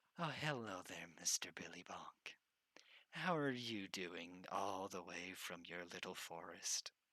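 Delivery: put-on patronizing tone, as if speaking to a small child. Voicing a woman bending down to greet a small character, talking down to a small child. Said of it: "bending down to look at like to talk to a small child".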